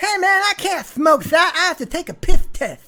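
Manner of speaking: very high, loud cartoonish voice. Doing a self-mocking impression of a boxer: Mike Tyson impression. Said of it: "my best Mike Tyson impression that sounds more like Roger Rabbit".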